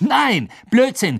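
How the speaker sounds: high voice, words called out. Narrator voicing Ron, disagreeing with Harry about the tournament, called out. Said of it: "rief Ron".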